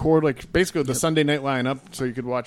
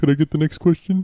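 put-on, loud, silly elf voice; 3 semitones higher, 5 dB louder than usual. Asking Dean for the next question, speaking in a put-on elf voice.

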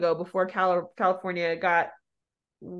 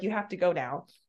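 ordinary talk, nothing marked

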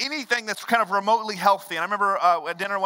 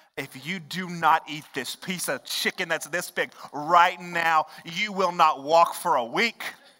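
slow, deliberate, threatening delivery; 3 semitones lower than usual. Acting out a parent making a child eat chicken, mock-threatening a child. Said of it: "you start threatening".

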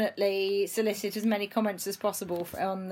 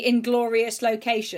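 plain

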